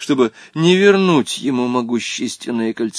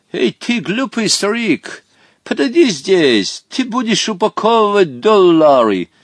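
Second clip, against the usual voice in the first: high, insolent, haughty, arrogant yell; 8 semitones higher, 4 dB louder than usual. Narrator reading a story, Van Dendalis orders Hottabych about; shouted insolently. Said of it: "крикнул Хоттабычу".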